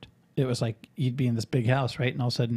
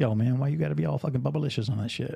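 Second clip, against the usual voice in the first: fake American dialect, mock slang-heavy voice.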